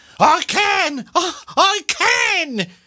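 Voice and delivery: very high, very slow, drawn-out crying out. Mrs. Twit answers Mr. Twit's question: cried out. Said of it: "cried Mrs. Twit".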